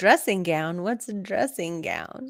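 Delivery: ordinary talk, nothing marked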